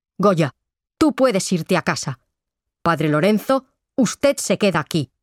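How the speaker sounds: plain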